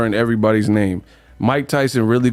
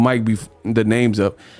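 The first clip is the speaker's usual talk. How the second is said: normal talking voice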